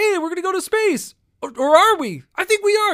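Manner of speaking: loud, high, squeaky voice, stuttering and stumbling. Showing how the confused Star Tours character talks, in a stuttering Rex voice. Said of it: "very stutter stuff".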